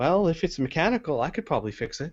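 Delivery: tiny, small, squeaky high voice. Narrator voicing a character piping up from the motorcycle, small squeaky voice. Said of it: "a small kind of squeaky voice pipe up".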